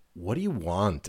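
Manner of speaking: mock high school mean-girl delivery. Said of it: "like a high school mean girl".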